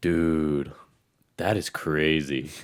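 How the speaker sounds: put-on dazed, out-of-it sounding voice. Retelling a stranger stopping him before a race: imitating someone sounding out of it. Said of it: "he just sounded, like, so out of it".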